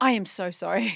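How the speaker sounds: put-on apologetic tone. Retelling how people who stop them in the supermarket apologize: imitating an apologetic stranger. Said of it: "people are really apologetic".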